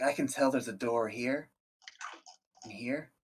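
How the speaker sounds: whispered voice. Voicing the gnome pointing out doors: whispering. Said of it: "He whispers to you".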